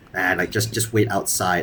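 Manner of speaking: ordinary talk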